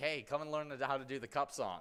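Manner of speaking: plain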